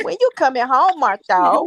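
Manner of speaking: woman's voice heard over a phone. Retelling a late-night phone call, imitating Tisha. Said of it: "I gotta say it like her".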